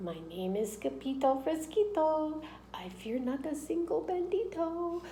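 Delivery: very soft, high and slow voice. Narrator reading a sword fighter's reply as the banditos come at him, very soft voice. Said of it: "muy, muy soft voice he said".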